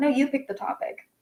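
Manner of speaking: play-acted huffy, affronted, indignant tone. Retelling a reply while on the verge of tears: imitating own indignant tone. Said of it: "I'm, like, indignant".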